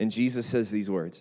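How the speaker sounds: ordinary talk, nothing marked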